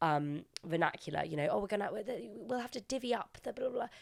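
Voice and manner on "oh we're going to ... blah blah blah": put-on posh, twee upper-middle-class British accent, pitched up. Imitating the mum in the episode: twee upper-middle-class British talk. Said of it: "that classic twee, um, upper middle class".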